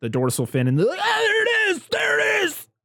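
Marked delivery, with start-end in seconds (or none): 1.0-2.6 very high-pitched, rough, creaky shouted yell. Retelling a movie scene where men spot the shark fin, imitating a man's yell. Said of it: "how the guy sounded when he yelled it".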